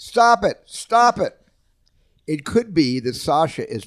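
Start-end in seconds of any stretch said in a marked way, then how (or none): 0.0-1.3 put-on piercing, very high, shrill, loud child's scream. Describing two kids quarreling, acting out a kid screaming. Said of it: "one kid starts screaming".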